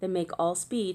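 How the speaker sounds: ordinary delivery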